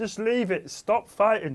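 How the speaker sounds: London geezer accent. Joking about someone outside a kebab shop stopping a fight, put-on London accent. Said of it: "done it in that voice".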